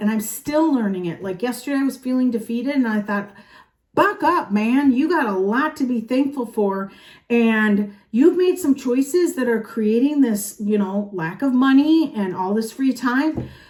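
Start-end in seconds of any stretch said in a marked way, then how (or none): none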